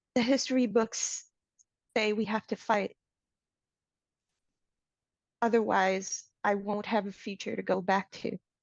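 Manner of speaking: terrified, frightened inward mental voice. Voicing a frightened character speaking into everyone's minds: quiet terrified voice. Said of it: "in a really quiet, terrified, mental voice".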